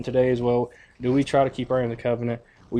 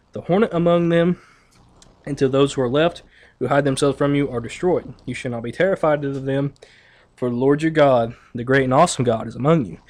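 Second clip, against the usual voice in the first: ordinary talk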